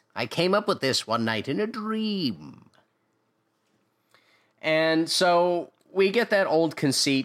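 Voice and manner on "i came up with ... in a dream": put-on excited villain voice. Retelling a cartoon scene, quoting the villain Skeletor: excited Skeletor voice. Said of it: "And Skeletor's all excited".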